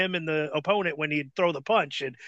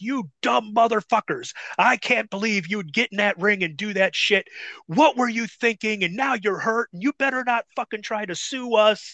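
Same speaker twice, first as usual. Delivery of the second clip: mock angry, furious ranting delivery; 4 semitones higher than usual. Speaker retells what was yelled at them in the back, retelling a yell. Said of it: "Les Thatcher's yelling at us like".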